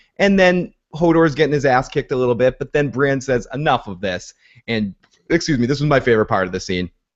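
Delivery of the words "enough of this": ordinary talk, nothing marked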